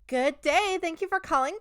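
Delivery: very high, sugary, sweet put-on girly voice. Demonstrating the phone-answering spiel, in a high, sweet girly phone voice. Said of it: "I genuinely do turn into one of those like catfish gamer girls when I answer the phone".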